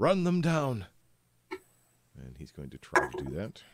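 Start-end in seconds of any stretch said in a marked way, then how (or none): 0.0-0.8 very high, loud, commanding shout. Voicing a captain pointing his sword and ordering: captain shouting an order. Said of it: "and just simply shouts".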